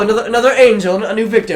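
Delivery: put-on loud, high, belted-out British accent. Retelling a game trailer, quoting the voice in the background: Bayonetta British accent voice. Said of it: "British accent voice in the background".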